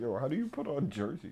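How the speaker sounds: mocking, baffled, clueless-sounding tone. Teasing another player by repeating their question about jerseys: mocking imitation of a friend's question. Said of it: "it's just the way you said it".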